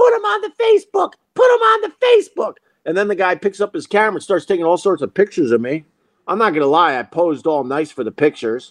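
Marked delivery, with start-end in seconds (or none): 0.0-2.5 play-acted very high-pitched, shrill, repeated screaming. Retelling a bystander urging the guy on: imitating someone screaming. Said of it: "starts screaming to the guy".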